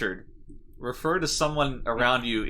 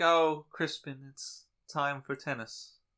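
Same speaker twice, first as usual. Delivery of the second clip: dainty, affected, effete put-on English accent; 2 semitones higher, 5 dB quieter than usual. Acting out a dainty English name being called: put-on effete English voice. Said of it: "very effete, kinda dainty English name".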